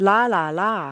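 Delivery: syllables "la la la" rising then falling in pitch.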